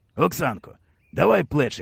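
plain

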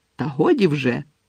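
snapping sharply. A woman cuts into a quarrel, said sharply. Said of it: "різко кинула мадам Малкін".

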